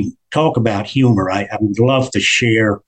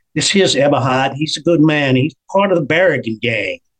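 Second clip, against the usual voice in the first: put-on New Jersey accent; 4 semitones higher than usual. Retelling how a man introduced a newcomer to Joey in the dining room, New Jersey accent. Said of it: "New Jersey accent".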